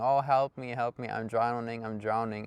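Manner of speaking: usual speaking voice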